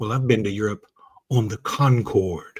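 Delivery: play-acted showy boast, one word savored and rolled. Retelling a friend's boast to Mom: imitating someone rolling "Concorde" off the tongue. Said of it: "she said it like that".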